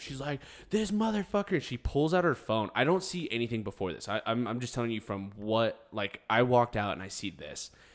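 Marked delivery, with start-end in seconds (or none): 0.7-1.6 screaming, very high, shrill and piercing. Telling of a girl screaming at a man trying to get another girl in his car, retelling a girl's scream. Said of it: "Another girl screaming at him".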